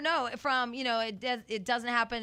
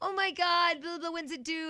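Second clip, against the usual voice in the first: mocking, put-on stupid voice, slower; 7 semitones higher than usual. Describing what people say to pregnant women, mimicking them in that stupid voice. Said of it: "they talk in that stupid voice".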